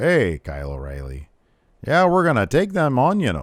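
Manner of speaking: put-on sing-song Minnesota accent. Retelling a wrestler's backstage lines: Von Wagner Minnesota accent impression. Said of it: "he sounds like he's from Minnesota".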